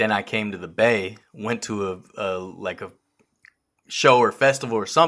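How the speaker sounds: normal talking voice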